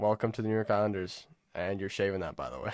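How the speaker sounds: ordinary talk, nothing marked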